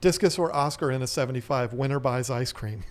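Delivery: ordinary talk, nothing marked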